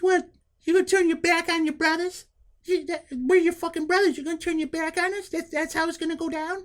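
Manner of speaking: very high, squeaky, helium-like voice. Recalling Stevie Burke's words as he walks away, imitating Stevie Burke's helium voice. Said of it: "he sounded like he had just sucked a balloon full of helium".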